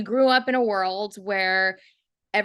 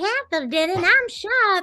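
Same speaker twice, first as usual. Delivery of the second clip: very high, silly, squeaky little voice; 11 semitones higher, 3 dB louder than usual. Retelling a silly voice added for a high character: dumb little voice. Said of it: "this dumb little voice going like".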